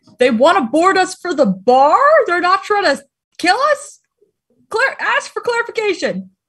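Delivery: high, calling-out voice. Role-playing a scene aboard a ship, calling out to the group, yelling from the back. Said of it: "I yell from the back".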